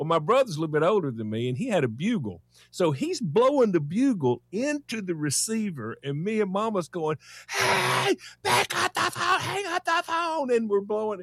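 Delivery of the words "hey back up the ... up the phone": mock shrill, very high child's scream. Telling how his brother blew a bugle into the phone, retelling a scream. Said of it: "So we're both screaming".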